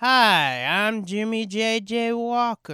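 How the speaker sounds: high, very slow, dazed drawling announcer voice. Retelling how he sounded in the first one, drugged-sounding J.J. Walker impression. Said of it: "it sounded like he was on, like, fucking mescaline".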